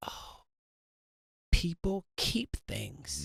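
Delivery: soft, slow, hushed realization.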